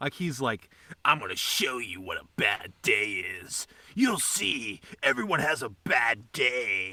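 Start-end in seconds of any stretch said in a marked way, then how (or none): 1.0-6.9 put-on low, try-hard edgy fifteen-year-old tough talk. Retelling a bad movie's character who talks like a teen: imitating an edgy 15-year-old. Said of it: "talking like a fucking edgy 15-year-old".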